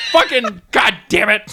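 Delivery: furious, high-pitched, loud, angry cursing. Retelling own reaction to a game's reminder to drink water: imitating own angry outburst. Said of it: "I was so mad".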